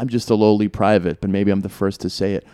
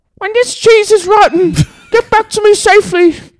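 very high, very loud, shrill put-on woman's voice; 8 dB louder than usual. Retelling what his ex-girlfriend said when she gave him cheese: Melinda's voice. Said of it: "I'll do it in her voice".

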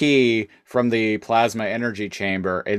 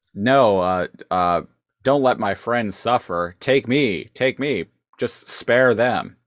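acted-out desperate, pleading voice. Retelling a scene where a character begs the Oracle: imitating a character pleading. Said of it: "pleading with the Oracle".

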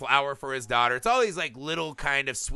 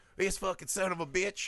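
higher-pitched, irate country bumpkin voice; 6 semitones higher, 6 dB quieter than usual. Retelling a movie town's reaction, imitating angry country bumpkins. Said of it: "you can just hear all these country bumpkins like".

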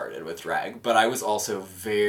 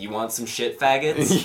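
put-on brash TV host voice, higher and louder; 4 semitones higher, 4 dB louder than usual. Retelling how she sounded filming a take: imitating Michelle Visage. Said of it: "she was just like".

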